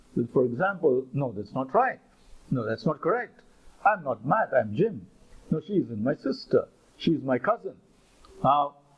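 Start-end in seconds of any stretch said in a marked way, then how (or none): none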